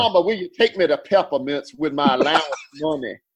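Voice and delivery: thick, exaggerated, cartoonish Georgia country drawl. Retelling asking Mama to go to the Peppermint record store: Foghorn Leghorn voice. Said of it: "I sound like Foghorn Leghorn".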